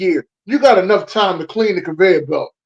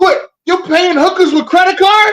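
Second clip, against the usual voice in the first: put-on outraged dad voice, higher and louder; 12 semitones higher, 5 dB louder than usual. Retelling a movie scene, imitating the dad from Wolf of Wall Street. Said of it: "That's what he kept saying".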